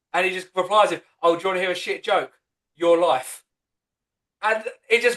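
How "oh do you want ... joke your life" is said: put-on, venomous, cutting tone. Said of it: "the way [name] delivers it is full of venom".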